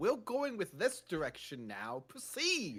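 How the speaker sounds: put-on evil voice. Retelling a directing session, imitating the evil voice a voice actor did. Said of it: "he did, uh, an evil voice".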